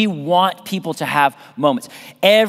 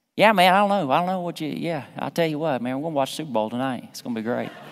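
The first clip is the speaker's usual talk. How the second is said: put-on Southern accent, lazily drawled out; 5 dB quieter than usual. Showing how a southern accent returns around southern friends: put-on southern accent. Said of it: "they took my Southern accent from me".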